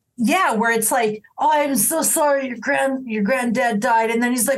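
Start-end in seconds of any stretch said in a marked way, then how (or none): 1.4-4.1 put-on drunken aggressive voice, higher pitched. Acting out a drunk at a wake consoling family: drunk and aggressive. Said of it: "In a drunk and aggressive way".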